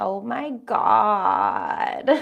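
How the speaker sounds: low, creaky, fried valley voice with vocal fry. Teaching a speech tip, demonstrate the example phrase in creaky voice. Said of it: "use creaky voice".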